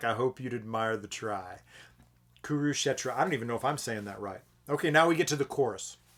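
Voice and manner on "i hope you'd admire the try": deeper, much quieter, slower voice. Speaker quotes the way a man delivers his line: retelling in a deepened voice. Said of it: "his voice kind of deepens".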